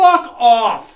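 very loud, booming shouted yell. Retelling watching a movie, imitating own shouting at the TV. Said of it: "I'm just shouting at the T V".

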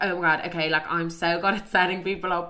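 ordinary talk, nothing marked

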